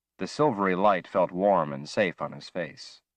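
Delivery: plain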